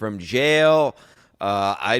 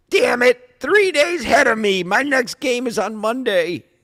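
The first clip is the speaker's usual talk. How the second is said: very high, squeaky, raised, frustrated, exasperated voice; 13 semitones higher, 5 dB louder than usual. Reading a text exchange aloud, imitating Bobo's voice. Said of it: "'cause I'll do his voice".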